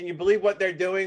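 normal talking voice

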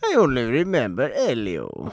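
bad, failed put-on Italian accent, sing-song. Repeating the film role's name, failed put-on Italian accent. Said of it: "That was not Italian either".

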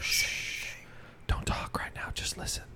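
hushed, breathy, shushing whisper. Acting out what they would say to people trapped in their dungeon: whispering. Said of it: "I just whisper to 'em".

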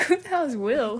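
ordinary talk

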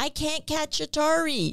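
small, high-pitched yelling voice calling out. Recalling a voice heard calling from the yard, retelling a little voice yelling. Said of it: "I hear a little voice yelling".

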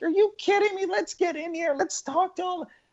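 acted over-the-top outburst, very high, loud, swooping, energetic. Retelling the team walking into Canada House, the speaker imitates loud, energetic Joan. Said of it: "she's loud, she's energetic".

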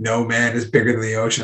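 plain

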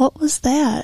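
high-pitched, frightened, startled voice. Retelling what a man said in a dark garage, imitating a scared voice. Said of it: "In a scared voice".

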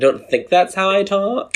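put-on very high-pitched valley girl voice. Imitating the other speaker right back: imitating a valley girl accent. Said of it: "so Valley Girl".

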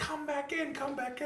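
very high-pitched, calling-out yell. Retelling people yelling at him from shore: imitating people yelling. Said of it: "they're yelling, like".

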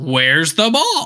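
light, mild, playful half-scream yell. Joking about a confusing baseball play, the speaker imagines a mock scream, Wendy's commercial. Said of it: "I would have just screamed".

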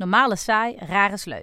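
plain

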